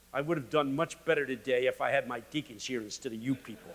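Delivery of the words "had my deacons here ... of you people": ordinary talk, nothing marked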